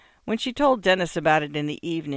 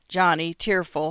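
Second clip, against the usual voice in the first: plain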